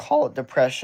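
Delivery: cracking, breaking voice mid-line. Answering a question about past depression, voice cracking. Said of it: "you hear that voice crack".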